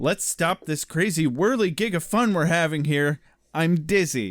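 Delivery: exaggerated put-on sarcastic tone. Sharing a quote of the day from an episode, retelling a sarcastic line. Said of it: "he sarcastically says".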